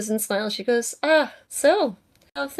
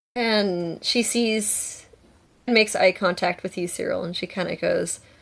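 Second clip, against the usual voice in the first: ordinary delivery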